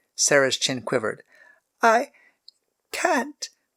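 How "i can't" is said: very small, tiny, very high little voice. Narrator reads Sarah's reply to Jeroboam's stern order, in a tiny voice. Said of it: "she said in a tiny voice".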